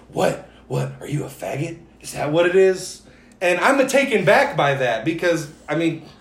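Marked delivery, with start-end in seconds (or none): 0.1-3.0 whispered voice. Retelling a confrontation where a man got in his face: imitating someone whispering. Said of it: "he's whispering".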